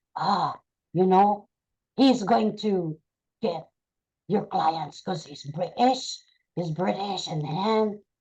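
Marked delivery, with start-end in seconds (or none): 2.0-7.3 demonic voice. Retelling what an inner voice said about a British trainee, in a demonic voice. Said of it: "a demonic voice came to me and said".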